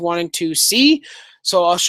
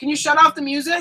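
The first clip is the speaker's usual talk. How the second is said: high, loud yelling call; 9 semitones higher than usual. Asking dad loudly to shut off the music: yelling. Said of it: "I'm gonna go yell at my dad".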